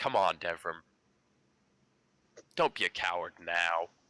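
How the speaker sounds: threatening whisper. Voicing a character taunting another face to face: whispering in his face. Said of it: "just kinda, like, whispering it in your face".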